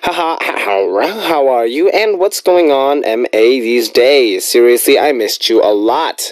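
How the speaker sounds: plain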